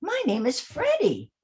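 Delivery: high-pitched storybook character voice. Demonstrating the characters' voices, speaking as Freddie in a high-pitched voice. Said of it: "has a much lower voice".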